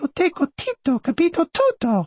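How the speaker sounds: put-on high-pitched voice. Acting out the mother in italian tv family arguments, high voice. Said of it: "High voice".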